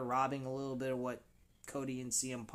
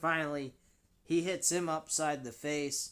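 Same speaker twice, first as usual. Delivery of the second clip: normal talking voice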